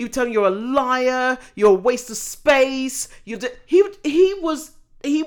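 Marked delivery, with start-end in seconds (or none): 0.3-3.1 loud yelling with the word liar dragged out. Retelling how a TV host would shout at guests: imitating Jeremy Kyle shouting. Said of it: "He would shout at them".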